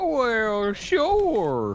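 weird, very high, twangy drawl. A podcast guest answers the host in a weird twangy redneck accent. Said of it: "really weird twangy redneck".

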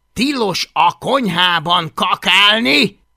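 loud, deliberate, snapped telling-off tone. Hablagy, carrying Fogatlan out of the kitchen after another accident, snapped. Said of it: "Recsent rá Hablagy".

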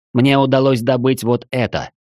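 ordinary delivery, nothing marked

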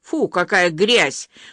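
loud, spat-out words. Narrator reads a woman nearby reacting to an overheard confession, loud, spat out. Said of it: "громко произнесла она, как выплюнула".

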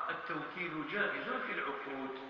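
usual speaking voice

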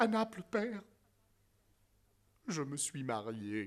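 tearful, teary voice. A son finally confesses a secret to his father, tearful confession. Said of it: "je vous le dis, les larmes aux yeux".

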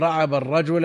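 ordinary delivery

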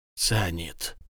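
muttered. A character bids the gentlemen farewell and raises something to his mouth, muttered. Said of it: "пробормотал он".

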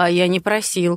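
ordinary delivery, nothing marked

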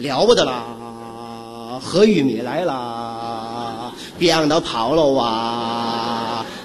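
excited, low, slow sing-song crowd cry.

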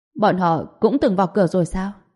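ordinary delivery

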